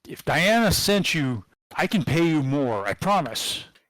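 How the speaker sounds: slightly desperate pleading. Game master voicing the voice coming from the speakers, a little more desperate. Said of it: "sounding a little bit more desperate".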